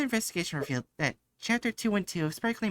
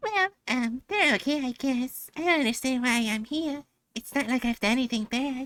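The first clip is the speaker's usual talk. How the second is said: character voice pitched way up high; 6 semitones higher than usual. Voicing Ichigo answering another character's question: high Ichigo character voice. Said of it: "I've never done my voice that high before".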